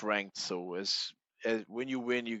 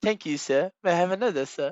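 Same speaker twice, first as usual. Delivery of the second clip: booming, badly done put-on British accent, pitched up; 9 semitones higher, 8 dB louder than usual. Told not to try it, the speaker quotes a line anyway, bad British accent. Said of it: "don't start with the British accent".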